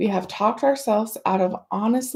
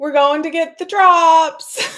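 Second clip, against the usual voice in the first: put-on very loud, high four-year-old child voice; 7 semitones higher, 8 dB louder than usual. Retelling what the son said while leaving the doctor: imitating a child saying it loudly. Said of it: "he says loudly".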